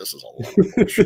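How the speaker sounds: acted mutter under breath. Retelling having to watch every episode of a show: imitating own muttering under breath. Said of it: "I'm just muttering under my breath".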